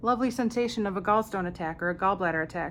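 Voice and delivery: ordinary talk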